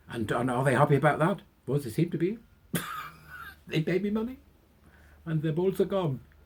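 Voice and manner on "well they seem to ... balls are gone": bad put-on Norwegian accent, high and sing-song. Answering an interviewer's question, bad norwegian accent. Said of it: "That's not a very good Norwegian accent".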